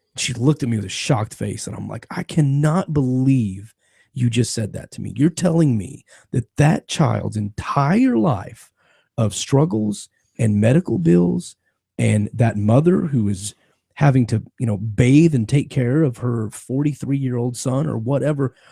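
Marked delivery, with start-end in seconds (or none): none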